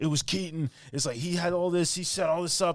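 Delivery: put-on ranting tone. Retelling a detective's big moment in a film: imitating a rant. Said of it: "amazing rant where he's just like".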